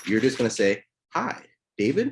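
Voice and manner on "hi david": hi said with a rising questioning lilt. Demonstrating how to open a phone call, saying the greeting in a questioning tone. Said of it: "say it in a question tone".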